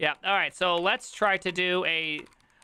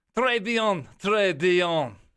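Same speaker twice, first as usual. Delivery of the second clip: put-on Russian accent on French words; 4 dB louder than usual. Speaker tries out a russian accent while speaking french, in a put-on russian accent. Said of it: "That is me making Russian accent".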